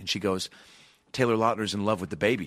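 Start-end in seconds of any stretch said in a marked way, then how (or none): none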